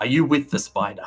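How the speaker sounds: loud call across distance. Voicing an attacker who misses with a crossbow: yelling. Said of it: "he also yells out and says".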